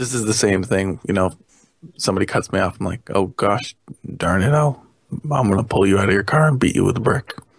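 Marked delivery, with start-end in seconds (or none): 3.1-7.3 acted, level, matter-of-fact menace, no heat. Retelling own reaction when cut off in traffic: imitating a flat emotionless threat. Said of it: "just straight emotion level".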